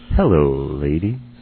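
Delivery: film-star movie-trailer line delivery. Retelling a movie preview line, imitating Angelina Jolie's line. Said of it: "in just a much better voice than I can".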